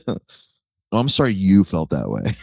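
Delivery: insincere, passive-aggressive, sing-song delivery. Picturing God as a partner: passive-aggressive God voice. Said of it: "picturing God as just, like, a passive-aggressive partner".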